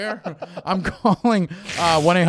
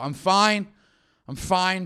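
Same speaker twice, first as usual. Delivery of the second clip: put-on angry voice. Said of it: "You say it like that".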